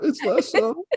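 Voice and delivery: high, laughing, mock-sad squeak. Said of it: "That sounded so sad".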